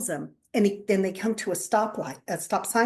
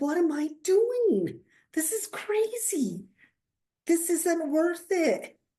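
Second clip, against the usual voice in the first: high, slow, startled voice. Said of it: "And he was like".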